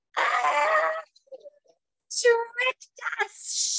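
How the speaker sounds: very high, horrible, hissing witch shriek. Reading a story aloud, voicing the tricked witches: hissing, horrible witch shriek. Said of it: "shrieked the witches in hissing, horrible, shrieking".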